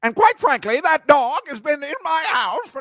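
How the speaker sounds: shrill witch voice, badly done. Attempting a Margaret Hamilton impression that falls flat: bad Margaret Hamilton impression. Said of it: "no, that wasn't good".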